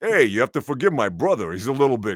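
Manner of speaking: put-on heavy, deep New York accent, laid on thick, fast. Describing one of the Samurai brothers characters, deep New Yorker accent. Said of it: "deep New Yorker".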